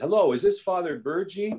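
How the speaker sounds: thick exaggerated Italian accent. A priest retelling a phone call, imitating Archbishop Ventura's heavy Italian accent. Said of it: "a man with a heavy Italian accent".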